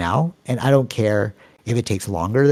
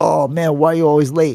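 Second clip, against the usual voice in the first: clumsy, fake Jamaican accent, pitched up; 5 semitones higher, 4 dB louder than usual. Retelling what a physics teacher said to a late classmate, bad Jamaican accent. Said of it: "That was a bad Jamaican accent".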